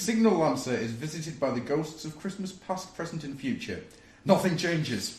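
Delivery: ordinary talk, nothing marked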